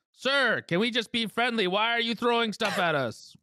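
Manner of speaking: high-pitched yell, calling out. A player's character yells to a stranger throwing things at them, yelling. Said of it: "I yell in common".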